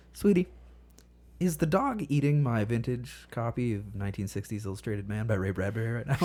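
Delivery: very calm, sweet voice with panic held down. Retelling a question to a spouse while panicking inside: imitating calm speech. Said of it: "I say to my wife very calmly".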